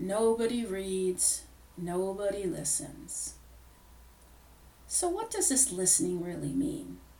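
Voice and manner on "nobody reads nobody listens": very slow, gloomy, sad, droopy donkey-like drone. Quoting her husband's former co-worker on listening, in his Eeyore voice. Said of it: "always said in his Eeyore voice".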